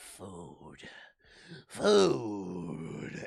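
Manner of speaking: rough, low growling. Picturing Bertie coming downstairs for food like Gollum, in a Gollum voice. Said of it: "picture Bertie being like Gollum".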